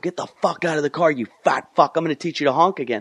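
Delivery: hot, screamed delivery. Speaker retells confronting a driver who honked, at a red light, retelling a scream. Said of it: "and I just start screaming".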